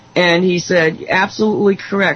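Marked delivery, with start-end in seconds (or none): none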